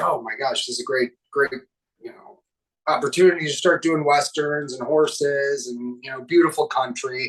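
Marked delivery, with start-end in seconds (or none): none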